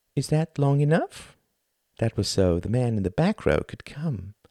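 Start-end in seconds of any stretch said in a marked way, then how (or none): 0.1-1.3 mild, gentle, pitched up. After the lights go dark and a pause, the thin man speaks softly. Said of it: "said softly".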